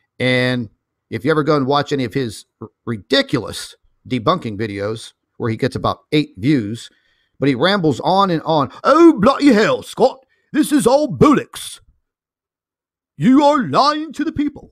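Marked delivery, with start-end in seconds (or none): 8.8-14.5 fake British accent, pitched very high. Mocking a man who rambles in debunking videos, in a put-on British accent. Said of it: "I actually have a better British accent than he does".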